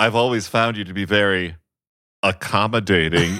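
put-on, sly, loaded, suggestive innuendo tone. Imitating a movie character's line: suggestive double-entendre voice. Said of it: ""I'm making a double entendre," like, sort of voice".

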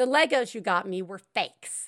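simple, plain, matter-of-fact statement without fuss. Retelling how a seven-year-old announced the Legos were fakes: imitating Ellis saying it matter-of-factly. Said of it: "just says very matter-of-factly".

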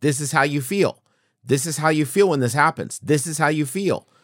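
mock very high, loud, furious yelling. Retelling deleting a game in anger after a long run: imitating own angry yelling. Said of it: "I started yelling".

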